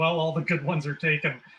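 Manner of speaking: ordinary talk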